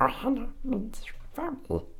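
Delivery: put-on cartoon alien voice. Talking about the movie, the speaker quotes its famous line in a Stitch impression. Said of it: "It's my Stitch impression".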